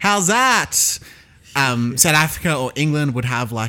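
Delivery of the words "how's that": very high, put-on Australian accent. Retelling a cricket video game's voice lines: imitating a game's Australian voice. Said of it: "generic voices for each group".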